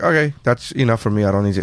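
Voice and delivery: normal talking voice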